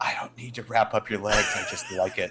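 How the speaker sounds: hushed, soft whisper, close to the ear. Retelling what an orderly said while wrapping feet: imitating a whisper. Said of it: "he whispers in my ear".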